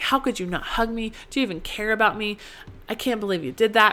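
angry, accusing voice loaded with anger. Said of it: "coming from this place of anger".

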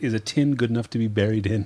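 ordinary talk

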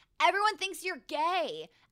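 play-acted, high, shouted yell. Recounting a story, the speaker re-enacts yelling it at someone: retelling own yell. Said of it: "I was yelling the story".

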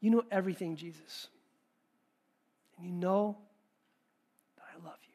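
acted sorrowful, hurt, brokenhearted, grieved tone. Showing how Peter likely answered Jesus: grieved, brokenhearted tone. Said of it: "It says he was grieved".

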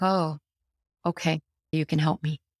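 normal talking voice

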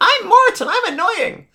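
very high, loud, squeaky lemur voice. Describing the Madagascar sidekick Mort, speaker does a Mort impression. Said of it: "It's a pretty good impression for me".

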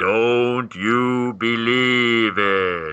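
very ghostly, spooky voice. Retelling a cartoon ending where Tom answers the radio, in Tom's ghostly voice. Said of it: "in a very ghostly voice".

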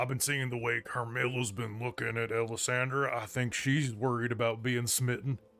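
theatrical stage whisper, leaning in. Voicing Gundren as he leans in, in a stage whisper. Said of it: "do a stage whisper and go".

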